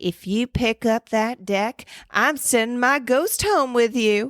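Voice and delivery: terrible fake Southern drawl. Retelling what she said over a canasta game, terrible Southern accent. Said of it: "That was a terrible Southern accent".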